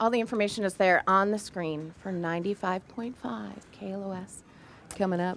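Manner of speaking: gentle, soft, hushed, toned-down radio announcer voice. Reading out a station plug on air: put-on soft radio voice. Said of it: "I like how you got all soft there".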